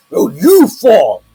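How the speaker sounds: creature shouting. Game master voicing one of the monsters yelling back at a player, monster yelling. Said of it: "one of them yells".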